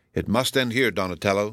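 plain

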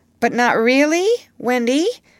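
anxious, worried, uneasy, pitched a bit high. Peter asks wendy a question; anxious. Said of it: "he asked anxiously".

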